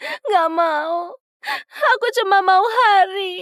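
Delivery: very high crying voice, one word drawn out. Refusing an offer of other boys, crying while talking. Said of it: "jangan nangis".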